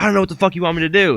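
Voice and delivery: very high, loud, shrill screaming. Recounting a screaming match at training, the speaker is imitating someone screaming back. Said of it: "And Gary's like screaming back".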